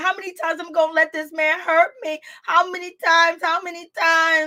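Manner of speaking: tearful, hurt, high-pitched crying plea. Retelling a reality show scene: imitating Erica Mena crying. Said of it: "Erica Mena is crying. She's like".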